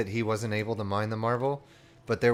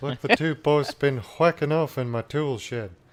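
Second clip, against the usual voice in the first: silly cartoon voice, higher and louder; 4 semitones higher, 5 dB louder than usual. Performing a requested line for another speaker: King of the Hill voice. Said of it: "I wanna hear him say".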